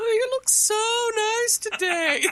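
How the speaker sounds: weird, very high-pitched, full silly voice. Imitating how Cecil voiced the trees in a creepy episode, in a weird Muppet voice. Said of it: "weird Muppet voice".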